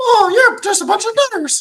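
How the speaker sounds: squeaky, high and loud, British accent. Trying out a voice idea for Jez, in a British Mickey Mouse voice. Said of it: "like a British Mickey Mouse for Jez".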